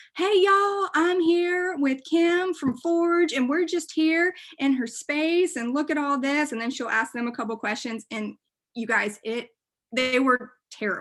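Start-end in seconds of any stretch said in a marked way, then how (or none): 0.2-6.5 put-on thick Alabama accent, high and slow. Imitating a woman recording on her cell phone, in a thick alabama accent. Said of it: "she's got a really thick accent".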